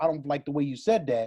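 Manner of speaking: ordinary delivery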